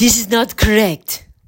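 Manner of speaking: weak, failed attempt at a Russian accent. Imitating a woman who corrects his poses, attempted Russian accent. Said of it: "I'm going to try to do her accent".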